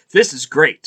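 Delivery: plain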